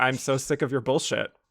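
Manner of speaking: flat deadpan delivery. Recapping a show scene where Ellen answers Patty, Ellen's deadpan reply. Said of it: "deadpans back to her".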